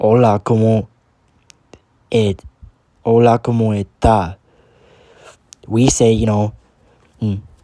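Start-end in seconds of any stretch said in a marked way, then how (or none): 0.0-4.4 Cuban Spanish accent with harsh T. Showing how speakers in Cuba say a greeting: Cuban accent, harsh T. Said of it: "more harsh?".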